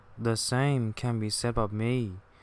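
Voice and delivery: plain reading voice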